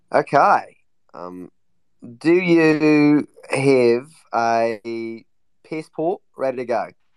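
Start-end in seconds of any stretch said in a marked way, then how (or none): 2.1-6.8 put-on Australian accent, loud, slow, very drawn out. Asking a guest if their passport is ready: mock Australian accent. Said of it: "why do you always mock people's accents".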